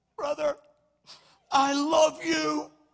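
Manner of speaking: put-on booming, loud, drawn-out tearful bawling outburst. Speaker retelling walking up to a brother and speaking to him, reenacting bawling and crying. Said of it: "I'm bawling, I'm crying".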